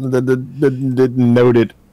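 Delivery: slow, halting stammer over the opening word. Voicing a crewman who fumbles a shotgun, stammering. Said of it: "stammers out".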